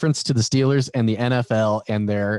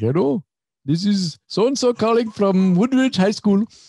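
put-on Indian accent, voice pitched very high; 10 semitones higher than usual. Retelling a job call from a high school caller, imitating an Indian accent. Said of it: "And so that's what he sounded like".

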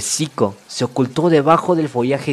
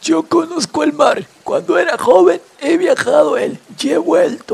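put-on very high, raspy, hoarse old catfish voice; 3 dB louder than usual. Narrator reading a fable, the catfish speaking to the young fish, hoarse voice. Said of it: "con su voz ronca".

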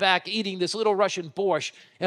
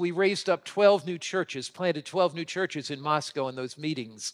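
ordinary talk, nothing marked

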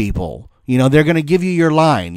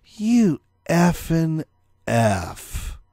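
quieter, scornful, disdainful put-on voice; 2 semitones higher, 7 dB quieter than usual. Retelling a classmate's insult about his outfit: imitating a disdainful classmate. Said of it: "the disdain dripped from her mouth".

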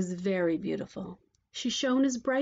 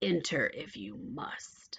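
slow, hushed, dreadful witch voice in a whisper; 5 semitones lower, 6 dB quieter than usual. Reading a fairy tale, the witch answers the princess at the door in a terrible voice. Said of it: "A terrible voice answered her".

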